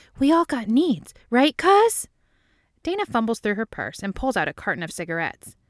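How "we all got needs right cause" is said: hushed whisper, higher pitched. Reading a story aloud, a character leans in to speak: whispering. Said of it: "She leans in to whisper".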